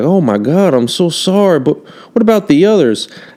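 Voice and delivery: high cowboy voice with drawl. Acting out a cowboy greeting a traveler: acting as a cowboy. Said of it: "he's like".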